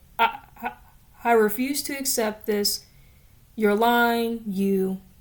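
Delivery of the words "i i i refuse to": ordinary delivery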